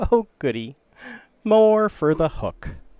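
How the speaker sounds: shrill, very loud cackling villain voice. Narrator voicing a figure whose voice Alric recognizes, cackling. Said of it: "hear a little cackle and go".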